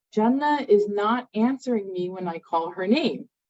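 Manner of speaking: ordinary talk, nothing marked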